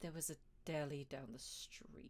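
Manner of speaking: emotionless deadpan delivery. Voicing a tired character answering a question about his sandwich: emotionless deadpan voice. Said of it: "talking in this very kind of emotionless, deadpan voice".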